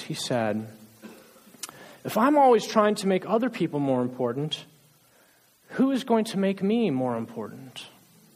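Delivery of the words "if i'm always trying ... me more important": crying, heartbroken, sobbing through tears. Retelling what Abram said in tears when asked why he was sad: imitating Abram's sobbing voice. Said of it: "in his sobbing voice".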